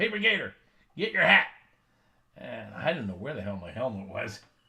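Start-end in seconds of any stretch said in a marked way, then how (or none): 0.0-1.5 very high, loud, high-pitched shout. Retelling the coach calling him onto the field: imitating the coach yelling. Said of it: "the coach turned around and yelled".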